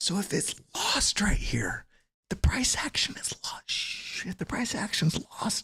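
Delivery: quiet whisper. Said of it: "It's a secret".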